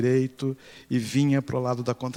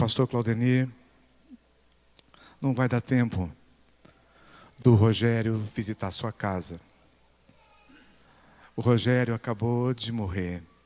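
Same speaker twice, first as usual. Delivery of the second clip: mock tearful weeping, crying; 2 semitones lower than usual. Retelling a phone call where a mother reports a death: imitating a crying mother. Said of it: "ela chorando do outro lado do telefone dizia".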